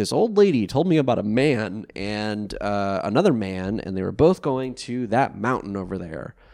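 ordinary talk

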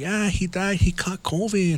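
acted mournful, sorrowful, downcast voice. Retelling what a woman told him, imitating her sad voice. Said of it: "she got all sad".

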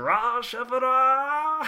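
very high-pitched anime-style shout. Retelling how a general dog shouts his name into the sky: Norio Wakamoto voice shouting. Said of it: "in the most Norio Mak-, Wakamoto voice possible, like, shouts his name".

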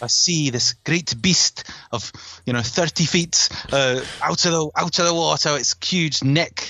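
bad put-on Scottish accent. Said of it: "don't do a Scottish accent, I can't bloody do it".

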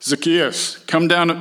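terribly posh speech. Reading a Bible story aloud, speaker voices Jesus' line in a posh Jesus voice. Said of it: "That's my Jesus voice".

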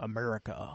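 deep Southern twang on "America". Showing the ironic way people say the word: deep Southern twang on America. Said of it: "this deep Southern twang on the word America".

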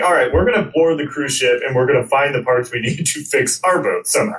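usual speaking voice

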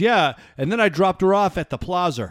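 put-on New Hampshire accent. Showing how people talk locally, quoting a friend: imitating Alan's New Hampshire accent. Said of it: "this is how we talk".

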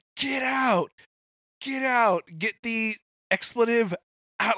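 furious shrieking yell, very high, drawn-out. Speaker recounts a game moment, retelling Stafford's scream. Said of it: "he is livid, just screaming".

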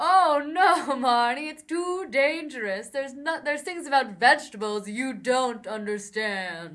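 loud, booming, spooky ghost voice. Speaker acting out a line to Marnie, trying to be Casper: Casper ghost voice. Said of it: "Is that what ghosts sound like?".

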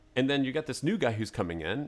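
ordinary talk

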